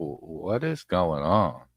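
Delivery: slow, confused, baffled, stammering. Retelling how a confused person sounded: imitating a high, confused voice. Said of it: "his voice got so high".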